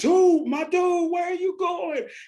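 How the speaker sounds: very high loud yell. Retelling yelling at a tube floating away: retelling a yell. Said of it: "And I'm yelling at him".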